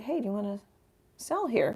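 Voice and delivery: normal talking voice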